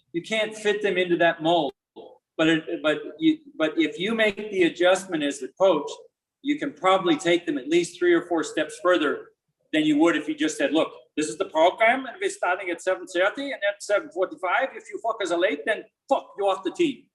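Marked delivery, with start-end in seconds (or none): 10.8-17.0 put-on higher-pitched German accent. Acting out a coach stating the team's rules: German accent. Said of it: "That was a pretty good accent".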